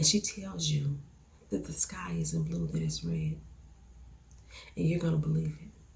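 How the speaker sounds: steady, even-toned, very quiet, low, hushed calm. Explaining how June talks to get her way, the speaker demonstrates: June's low, even, calm voice. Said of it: "she lowers her tone, speaks in an even, calm voice".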